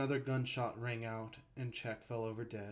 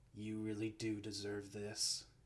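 mumbled, muttered under breath; 3 dB quieter than usual. While the board howls with laughter, he speaks, muttering. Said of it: "he muttered".

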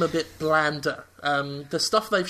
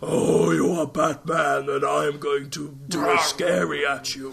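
very deep, slow voice; 3 dB louder than usual. Mocking the villain's new portrayal in trailers: deep Scarecrow voice. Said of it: "And now he's got this very deep voice".

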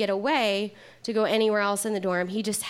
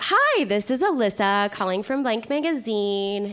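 put-on sweet, harmless, non-threatening girly voice; 4 dB louder than usual. Retelling a sales phone call, in her most non-threatening girly voice. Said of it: "in my most non-threatening girly voice".

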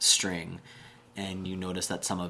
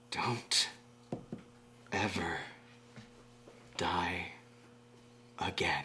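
very slow, faint whisper; 7 dB quieter than usual. Voicing a voice heard faintly in a character's head: faint voice of Ford. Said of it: "very faintly, you can hear the sound of a voice".

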